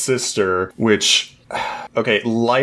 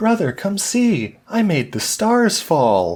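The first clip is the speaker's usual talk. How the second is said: really cute, very high, sing-song little voice; 10 semitones higher than usual. Retelling a sister character's line from a show: imitating a really cute voice. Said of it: "in this, like, really cute voice".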